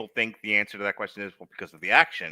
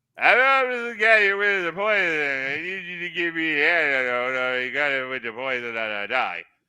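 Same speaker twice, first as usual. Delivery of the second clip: mush-mouthed, mumbled words, pitched higher; 7 semitones higher, 4 dB louder than usual. Acting out Sylvester Stallone fumbling a line on set: mush-mouthed Sylvester Stallone voice. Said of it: "getting more mush mouth with every performance".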